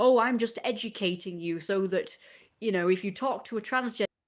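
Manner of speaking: play-acted, mildly condescending, patronising, lecturing tone. Quoting a person who lectured about terms: imitating someone condescending. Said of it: "it was a little bit condescending".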